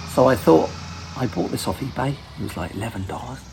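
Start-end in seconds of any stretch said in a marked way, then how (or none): 1.2-3.4 much softer hushed whisper. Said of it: "I don't know why I'm whispering".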